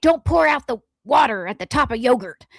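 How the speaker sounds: cross, angry scolding tone. Retelling food tips to show the source was mad: mock-angry scolding. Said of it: "I'm saying it like that again to emphasize that they're mad".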